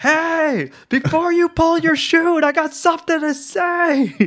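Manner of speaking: shrill, very high, drawn-out acted scream. Acting out a skydiving proposal before the parachute opens: screaming mid-air. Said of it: "You're screaming like".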